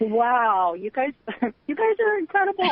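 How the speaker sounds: choked-up, swooping voice catching with emotion. Thanking the two readers after a card reading, choked up with emotion. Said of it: "I'm just a little choked up right now".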